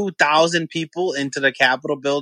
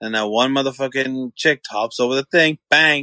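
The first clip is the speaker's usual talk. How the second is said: ordinary delivery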